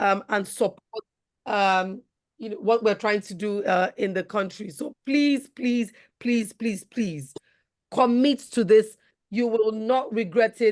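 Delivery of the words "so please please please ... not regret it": open, earnest, insistent, repeated pleading. Urging listeners to commit to the volunteer team: pleading. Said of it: "I'm pleading".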